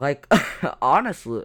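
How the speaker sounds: stifled laugh slipping into the words.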